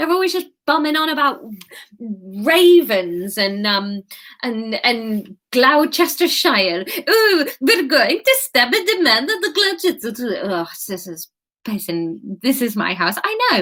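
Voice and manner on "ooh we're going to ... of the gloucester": badly done put-on Swedish accent, pitched up. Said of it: "in Assassin's Creed Valhalla".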